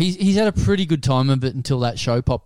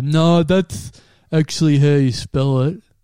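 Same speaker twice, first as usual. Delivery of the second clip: dopey dumb guy voice. Retelling what his dad said at parent teacher night, impression of his dad. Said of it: "a great impression of this guy's dad".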